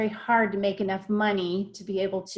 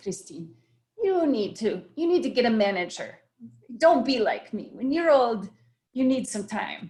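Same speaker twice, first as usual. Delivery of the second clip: English in a put-on Italian accent; 2 semitones higher than usual. Retelling what an Italian-speaking woman told her: put-on Italian accent. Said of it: "I'll do it with an American. Okay. But with the Italian accent".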